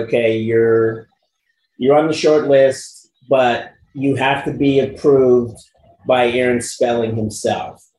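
ordinary talk

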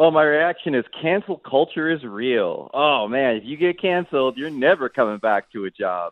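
ironic, sarcastic tone. Giving a first reaction to a coach's return to coaching: sarcastic. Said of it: "I sense some sarcasm".

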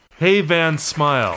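loud, high, shouted heckling yell. Retelling a concert moment, imitating an audience member yelling. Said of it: "in the audience yells out".

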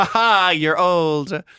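very high, loud, almost manic laughing. Retelling how a man told them about their aging: mock maniacal laughing. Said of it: "he said it like laughing almost maniacally".

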